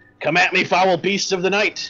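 high, full-volume, top-of-the-lungs shout. Voicing Quincy defying the beasts of the night: shouting at the top of his lungs. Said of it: "He shouts at the top of his lungs".

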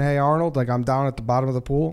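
ordinary talk

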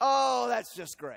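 sarcastic mock cheer. Showing how someone stuck with a flat tire says it: sarcastic. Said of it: "you're using it sarcastically".

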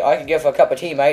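put-on British accent. Joking to Andre about how they talk, put-on British accent. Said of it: "aren't I very good at this British stuff?".

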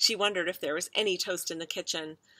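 plain reading voice

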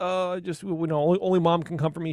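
mock, almost inconsolable, high sobbing crying voice. Retelling how Alice acts when only mom can comfort her: imitating Alice crying. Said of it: "almost inconsolable crying".

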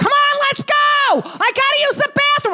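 very high-pitched, impatient yell. Retelling banging on the bathroom door for a child to hurry: imitating herself yelling through a door. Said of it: "I'm banging on the door".

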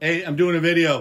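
loud, high-pitched shout. Calling out to a wife who just got home mid-video: yelling out. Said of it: "I'm just gonna yell out".

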